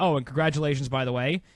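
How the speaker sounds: ordinary delivery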